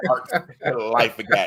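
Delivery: sounding proud of every word. Echoing the other speaker's words back: imitating someone sounding proud. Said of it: "I can hear the proudness in your voice".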